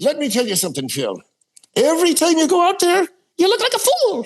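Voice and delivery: very high voice swooping way up and down, rising. Recalling a priest's habitual warning to the speaker, in Monsignor O'Keefe's swooping voice. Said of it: "He'd go way up and way down with his voice".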